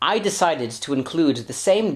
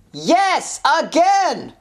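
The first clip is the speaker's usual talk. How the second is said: loud, yelled shouting; 11 semitones higher than usual. Acting a scene, answering whether they landed on a roof again: shouting. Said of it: "Why are you shouting?".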